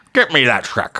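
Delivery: slow, royal-sounding cartoon lord voice. Joking about Shrek characters, voicing a line: Lord Farquaad voice. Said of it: "Lord Farquaad".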